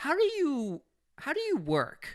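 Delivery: very high, slow, bewildered, exasperated squeal.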